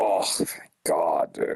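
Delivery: whispered, breathy, disgusted exclamation. Acting out the theater crowd at the end of the trilogy: mock-disgusted crowd reaction. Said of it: "hear the disgust in the crowd".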